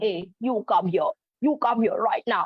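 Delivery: very low, deep bass character voice. Demonstrating voice changes for characters when telling stories to children, very low bass voice. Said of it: "making a very low voice, bass voice".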